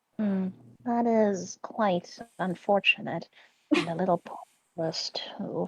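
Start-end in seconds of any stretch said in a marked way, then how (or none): 3.7-5.7 hushed, breathy whisper under the breath. Speaking in character about people seasoning Maurice, under her breath. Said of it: "She says that last part under her breath".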